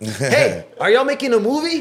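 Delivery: very high, loud, swooping, eager, curious voice. Describing filming in town when strangers walk up: imitating a curious passerby. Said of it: "without somebody saying".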